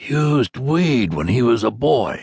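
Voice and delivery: loud, taunting, mocking stage whisper, drawn out. Leaning closer, a man jeers about another: loud mocking stage whisper. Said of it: "spoke in a loud and mocking stage whisper".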